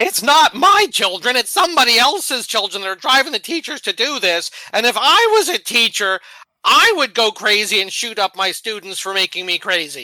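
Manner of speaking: mock snarky, loud, swooping sarcastic ranting voice. Answering a question about children, mocking the argument in Erin's Twitter voice. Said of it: "I'll try to use Erin's Twitter voice".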